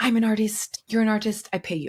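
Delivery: bad French Canadian accent. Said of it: "That was a really bad French Canadian accent".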